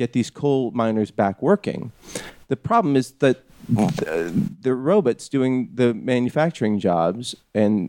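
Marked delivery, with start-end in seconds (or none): none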